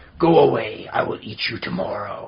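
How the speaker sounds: low, slow, growling storybook dragon voice. Father recounts reading a picture book to his daughter, in a growly dragon voice. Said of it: "I use a growly voice for the dragon".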